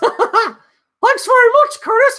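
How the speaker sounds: put-on cartoon mouse voice. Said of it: "that's a best Mickey Mouse voice".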